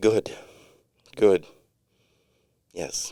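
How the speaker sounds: mock hushed, breathy, almost sexual tone. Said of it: "sometimes she says".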